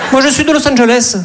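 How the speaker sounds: put-on high, sing-song southern French Midi accent. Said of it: "comédie romantique à New York avec l'accent du Midi".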